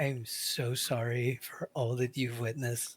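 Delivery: whispering. A role-play player speaks in character to another character, whispering. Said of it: "I'm whispering this".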